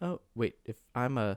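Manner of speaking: slow, low voice of dawning realization, working it out. Retelling a scene from the film, imitating the movie character. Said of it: "has this moment of, like".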